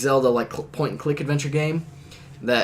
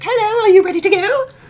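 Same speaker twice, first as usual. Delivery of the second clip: piped up very high and loud in fairy voice; 9 dB louder than usual. Retelling a scene where Navi flies in, in a high-pitched Navi voice. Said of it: "She's got this really high pitched Navi voice".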